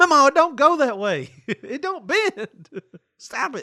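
very high-pitched, loud yelling. Retelling how the family told a grandmother to stop, retelling yelling at grandmother. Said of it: "we'd have to yell at her".

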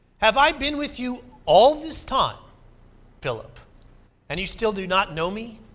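fed-up, exasperated voice. Speaker voicing Jesus's words to Philip from the Gospel of John, exasperated. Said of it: "in an exasperated voice".

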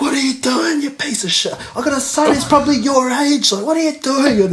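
very high, shrill, loud screeching. Recounting a driver yelling when the speaker cleaned her window, imitating a woman screaming. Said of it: "she just starts screaming at me".

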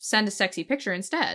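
ordinary delivery

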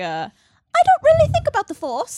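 very high, very loud, swooping sing-song lilt. Describing how she often talks, the speaker imitates her voice going up high. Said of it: "She goes up".

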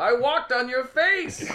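shrill, high, slow, drawn-out yell. Explaining a trivia answer about a sitcom, retelling a shout. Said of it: "He shouts things".

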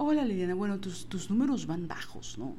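mock passive-aggressive politeness. Speaker retells her supervisor addressing her, imitating passive-aggressive supervisor. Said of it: "era una forma que era muy pasivo-agresiva".

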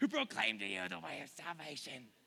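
low, rough, creaky, growling demonic voice. Reading a bible passage aloud, the speaker gives the girl's cry a demon voice. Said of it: "This is my demon voice".

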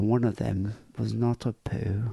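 put-on sad, melancholy tone. Discussing the emotion in Vicky's voice, imitating Vicky's melancholy. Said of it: "the emotion in her voice, the melancholy".

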